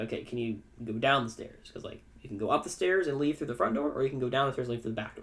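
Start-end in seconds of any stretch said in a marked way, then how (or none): none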